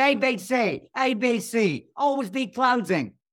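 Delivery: put-on slow, high, laid-on New York accent. Retelling a sales trainer's speech from a movie: Alec Baldwin New York accent. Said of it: "He comes in with a New York accent and says".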